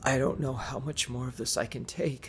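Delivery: soft, raspy, hoarse voice cracking and breaking apart. Narrator reading Eric admitting after seven hours of the game, hoarse cracking voice. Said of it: "Eric admitted in a hoarse and cracking voice".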